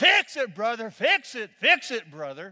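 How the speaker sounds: slow, drawn-out yelling at full volume. Retelling how a man jumped and yelled during your sermon: retelling a yell at full voice. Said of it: "he's yelling at the top of his voice".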